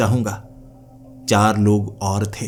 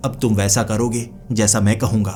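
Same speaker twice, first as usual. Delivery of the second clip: ordinary delivery, nothing marked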